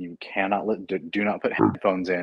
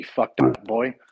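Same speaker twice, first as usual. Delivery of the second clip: thick put-on Irish accent, slower; 3 semitones higher, 4 dB louder than usual. Retelling a story, quoting the chief, thick irish accent impression. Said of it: "he had this thick Irish accent".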